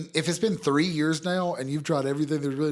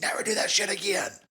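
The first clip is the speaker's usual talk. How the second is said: mock screaming, higher; 5 semitones higher than usual. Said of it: "And scream it at me".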